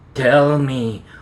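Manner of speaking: threatening, dropped low. Narrator, paws around another's throat, speaks in a low, threatening voice. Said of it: "I said in a low, threatening voice".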